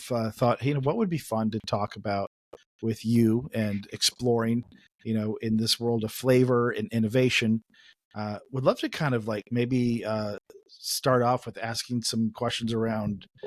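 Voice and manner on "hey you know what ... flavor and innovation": ordinary talk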